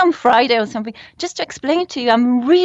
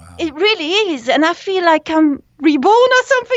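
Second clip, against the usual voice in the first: elated, upbeat, pitched-up, bright tone; 5 semitones higher than usual. Answering callers about feeling renewed after cold showers: upbeat. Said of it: "I've never heard you sound so upbeat".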